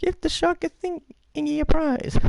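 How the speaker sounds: very high squirrely voice. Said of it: "Okay, Squirrely".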